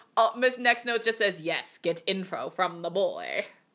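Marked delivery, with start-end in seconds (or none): 1.4-3.5 slow, deliberate voice, each word drawn out. Relaying what Miss Next Note says to do; Eliza voice. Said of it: "In the Eliza voice".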